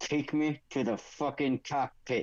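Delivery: quiet whisper, under the breath. Playing a hostage whispering an order to a stormtrooper: whisper. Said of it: "I'm just gonna whisper to the stormtrooper".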